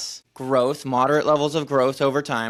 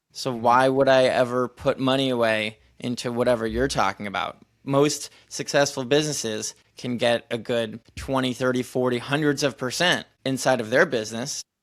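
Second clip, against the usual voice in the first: usual speaking voice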